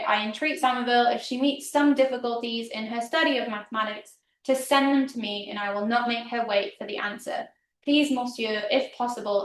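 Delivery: ordinary talk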